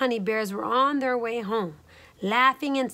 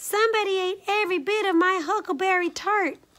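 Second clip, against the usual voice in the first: small, very high squealing voice; 9 semitones higher than usual. Little Honey speaks after Mama Honey Bear in the wrecked inn, in Little Honey's squeal. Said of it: "squealed Little Honey in his little bear voice".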